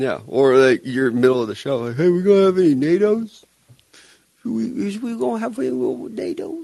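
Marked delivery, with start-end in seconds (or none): 2.0-6.6 put-on cutesy, high baby talk in a country accent. Imitating the other speaker to their face in the middle of the show, baby voice with a country accent. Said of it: "Not the baby voice that you did, but the country accent?".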